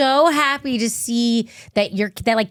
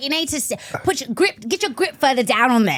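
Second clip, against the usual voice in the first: put-on Australian accent; 2 semitones higher than usual. Retelling what a childhood golf instructor said, in a Crocodile Dundee voice. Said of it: "looked and sounded exactly like Crocodile Dundee".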